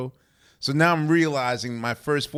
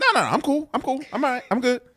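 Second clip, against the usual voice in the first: very high, defensive protesting tone; 12 semitones higher than usual. Retelling own answer when asked if nervous: imitating own defensive reply.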